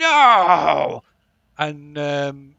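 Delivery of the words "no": raw, very loud, drawn-out, furious angry scream. Voicing a scream heard inside a player's head: angry scream. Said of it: "a angry scream inside your head".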